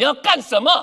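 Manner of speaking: put-on abrupt outburst, sudden, loud and high. Recounting pulling their feet away from someone, retelling a sudden shout. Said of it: "I withdraw my feet and shout".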